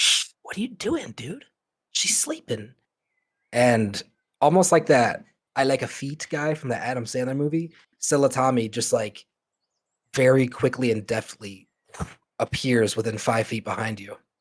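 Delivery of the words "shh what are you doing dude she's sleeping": very high, hushed shushing whisper. Game narrator voicing Tammy hushing a player over someone sleeping: Tammy's hushed whisper. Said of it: "When Tammy hushes down to us".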